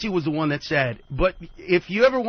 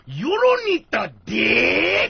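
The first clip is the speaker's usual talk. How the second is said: put-on heavy East LA accent, laid on thick, swooping; 5 semitones higher, 3 dB louder than usual. Retelling an old joke exactly as once said: imitating his own old thick East LA accent. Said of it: "this is exactly how I said it".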